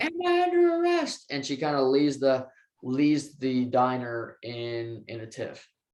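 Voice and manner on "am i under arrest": very high, shrill, demanding yell. Retelling a scene as he grabs her arm: imitating someone yelling. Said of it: "she yells".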